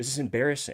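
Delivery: playful teasing. Retelling a golf partner's jab after a missed shot: imitating Sean joking around. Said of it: "he's kinda saying it in a way that's, you know, it, it's joking around".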